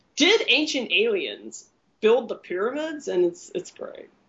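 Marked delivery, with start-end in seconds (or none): 0.2-3.1 put-on, swooping documentary announcer voice. Describing a show whose announcer plays a character: imitating the History Channel announcer. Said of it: "so you hear his voice like".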